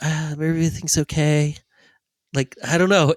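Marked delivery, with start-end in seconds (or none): 0.0-1.6 put-on childlike baby talk voice. Describing an actor who played leading-man roles: imitating a baby voice. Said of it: "he has this kind of baby voice".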